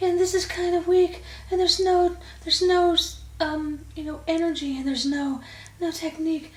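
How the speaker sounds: very high, breathy, airy falsetto with no energy. Demonstrating falsetto while describing how it sounds, in a breathy weak falsetto. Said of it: "I'm in a falsetto sound".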